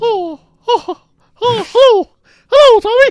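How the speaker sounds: very high, loud, squeaky cartoon mouse voice. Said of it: "Okay, Mickey Mouse".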